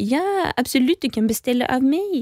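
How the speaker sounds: put-on French accent. Retelling ordering drinks from a server at the Grand Hotel; French accent. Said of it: "pratar med fransk brytning".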